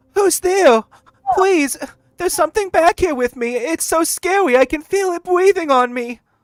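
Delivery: terrified shriek, very high and loud. Game master voices an unseen voice calling from the dark: crying out from the dark. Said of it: "a voice cry out from the dark".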